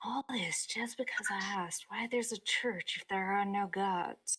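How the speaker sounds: half-swallowed, grumbling mutter under the breath. Voicing a character during the scene, muttering under her breath. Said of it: "one of the things she mutters is".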